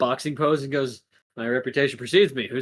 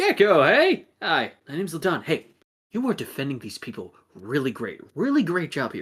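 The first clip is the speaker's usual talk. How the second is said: smug-sounding put-on character voice. Voicing Ladon greeting a kid, Gecko: voicing Ladon, smiling and smirking. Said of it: "looks at Gecko and goes".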